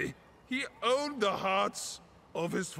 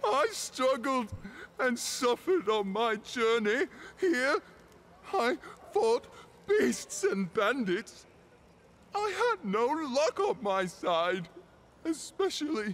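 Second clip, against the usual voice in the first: acted sobbing voice, higher; 4 semitones higher than usual. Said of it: "he's crying".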